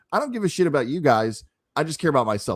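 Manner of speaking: plain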